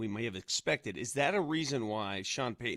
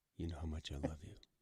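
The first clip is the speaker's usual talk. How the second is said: hushed, very soft half-whisper, barely audible; 7 semitones lower, 11 dB quieter than usual. Telling a departing guest on the line he is loved: half-whispering. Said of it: "Why were you whispering to him?".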